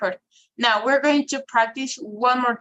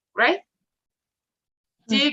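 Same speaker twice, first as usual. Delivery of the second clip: usual speaking voice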